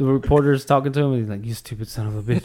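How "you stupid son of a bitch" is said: put-on mumbling old drunk man voice. Describing a video clip of him talking to a reporter, imitating a really old or drunk man. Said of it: "He sounds like a guy that's either really old or really drunk".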